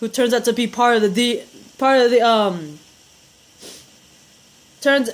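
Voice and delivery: speaking with food in mouth, chewing. Recapping a tv episode while eating, talking while chewing. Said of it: "I was chewing".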